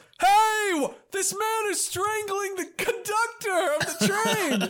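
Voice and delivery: high, loud, slow alarmed shouting. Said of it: "Everyone on the train goes".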